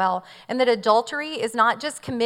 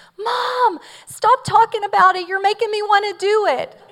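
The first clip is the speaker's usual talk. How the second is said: put-on very high, shrill, loud child's shriek, screaming; 11 semitones higher, 7 dB louder than usual. A mother recalls her child yelling from the back of the van, retelling Mark Douglas's loud scream. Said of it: "in a loud voice, I hear Mark Douglas scream".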